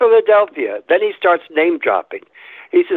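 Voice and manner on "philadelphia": put-on British accent, pitched up. Retelling meeting the president in Ghana, quoting him in a British accent. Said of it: "British accent".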